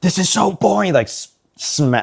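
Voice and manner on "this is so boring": mock very high, worked-up, amped-up angry blurt. Retelling how a strict teacher reacted to jokes: imitating an amped-up angry teacher. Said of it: "he'd get, like, really, like, amped up too".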